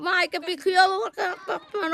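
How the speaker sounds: crying through the words, tearful.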